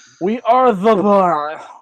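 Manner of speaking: slow voice as if teeth missing. Quoting a tag team's catchphrase the way he talks now: Cesaro voice. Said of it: "say it like Cesaro talks now".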